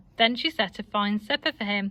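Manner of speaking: ordinary delivery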